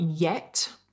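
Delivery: heavy stress on the word "yet". Reading a quoted online review aloud: stress on YET. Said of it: "I will emphasize the word yet".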